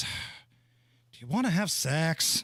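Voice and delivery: mock deeply disgusted voice, very slow. Retelling a bored evening, the speaker imitates her in a disgusted voice. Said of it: "in a very disgusted voice".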